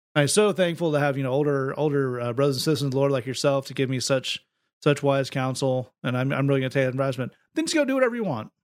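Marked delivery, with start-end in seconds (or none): none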